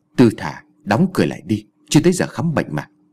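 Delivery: plain reading voice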